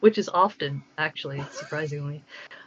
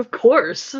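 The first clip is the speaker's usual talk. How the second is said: put-on, very loud and high, brash self-assured voice; 5 semitones higher, 8 dB louder than usual. Acting out being asked to sound like a whale: mock confident. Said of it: "And I'm so confident about it".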